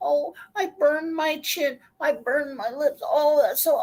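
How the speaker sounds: put-on griping, self-pitying, whining voice. Retelling a video maker's complaints after hot challenges: imitating someone complaining. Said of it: "and then she'll complain".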